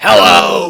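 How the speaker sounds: very loud, belted shout in a plain, ordinary voice. Showing how Toad sounds in the new version: shrill but normal-person Toad voice. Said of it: "sounds more like a normal person voice".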